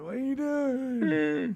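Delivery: put-on very high, very slow old man voice. Retelling a partner's question at night: imitating Terry sounding like an old man. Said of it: "I know Terry sounded like an old man".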